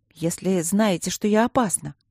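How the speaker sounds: plain reading voice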